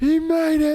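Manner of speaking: very high, loud, shrieking radio announcer voice. Retelling the radio announcer's call of the kick: imitating an announcer screaming. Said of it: "And he's screaming".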